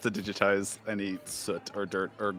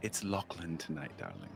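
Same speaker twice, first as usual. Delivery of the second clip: shushed, hushed voice, much quieter; 3 semitones lower, 10 dB quieter than usual. Acting out a scene, speaking to another character: hushed. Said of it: "you do a little shh".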